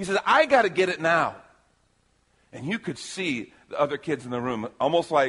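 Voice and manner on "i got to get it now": put-on frustrated, aggressive youth voice, higher and louder. Retelling a teen's objection to the vision: imitating a frustrated, aggressive youth. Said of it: "a little bit frustrated and even aggressive".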